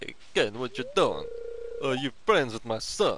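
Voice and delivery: sing-song, swooping put-on cat voice. Voicing a cat greeting another character, in a put-on cat character voice. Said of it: "That's a good voice for him".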